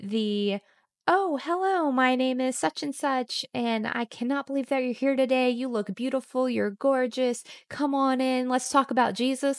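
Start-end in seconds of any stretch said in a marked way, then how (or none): 1.1-9.6 acted, high, gushing, fawning, overeager, overexcited voice. Imitating people who are overly excited to say hello: imitating an overly excited greeting. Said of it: "overly excited to say hello to me".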